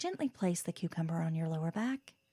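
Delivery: soothing radio lady voice, calm, low, soft.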